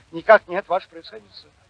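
ordinary talk

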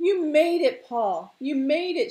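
drawn-out, loud, high-pitched calling cry. Sliding down from her mount as Paul reaches shore, crying out. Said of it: "she cried".

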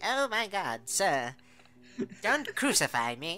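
slow, high mechanical voice. Joking with a co-host about the Power Rangers robot, Alpha robot voice. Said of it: "The fucking robot is like".

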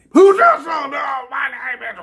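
put-on garbled, cutting-out audio voice, high and loud.

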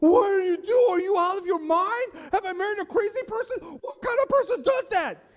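shrill, very high, very loud, rattled, terrified outburst. Telling a joke, voicing a husband after the shot: acting out terrified panic. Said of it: "The man is terrified".

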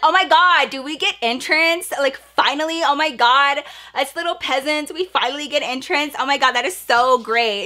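mock snarky, sarcastic, smart-aleck over-grateful gushing. Retelling a wait for entrance: retelling own sarcastic remarks. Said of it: "I'm just being a smart ass".

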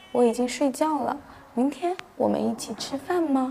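soft, coy, sweet, cutesy, coquettish coaxing voice. Demonstrating a sexier coquettish voice by speaking smaller: soft, coquettish voice. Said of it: "这个是不是很嗲且有性感呢？".

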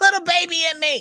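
shrill, very high, pleading, screaming voice. Retelling what a lady running into the street screamed: imitating a lady screaming. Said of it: "She was screaming".

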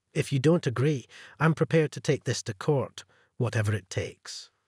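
ordinary delivery, nothing marked

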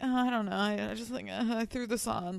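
put-on high, all-nervous, squirming voice. Retelling how he answered her compliment, imitating him being all nervous. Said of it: "he's like all nervous".

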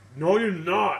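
loud yelling. A character refuses another's request to try some, yelling. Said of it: "why are you yelling?".

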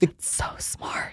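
hushed, secretive whispered aside. Reacting to a described injection technique, whispering. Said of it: "Why are you whispering that?".

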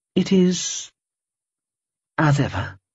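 very slow, hesitant, halting, high-pitched voice. Dajil answers Amorphia's question about the child; quiet. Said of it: "she said quietly".

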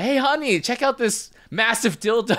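put-on brash, loud, shrill call, pitched way up. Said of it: "loudly in the store".

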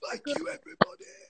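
high, husky, dried-out whispered croak.

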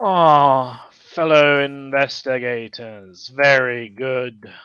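loud, very slow, drawn-out ogre voice. Voicing an ogre in a silk scarf who greets investigators: ogre voice. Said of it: "he kind of sees you coming up and he's like".

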